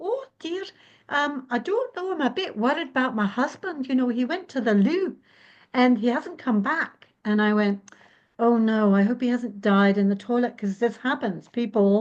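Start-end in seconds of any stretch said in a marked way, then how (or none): 0.0-7.1 put-on elderly woman's voice with a Scottish accent. Retelling what a little old scottish lady said to them, in an old scottish lady impression. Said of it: "this little old lady who's Scottish says".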